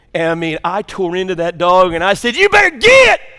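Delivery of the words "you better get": very loud, high, thundering hellfire-and-brimstone preacher delivery. Retelling squaring off against a dog coming at him, in a hellfire-and-brimstone preacher voice. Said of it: "hellfire and brimstone preacher boy".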